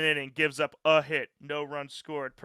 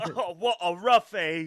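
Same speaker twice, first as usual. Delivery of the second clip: over-the-top put-on Cockney accent; 3 semitones higher than usual. Showing how a slang word sounds so English, in an extreme Cockney accent. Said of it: "The extreme Cockney accent".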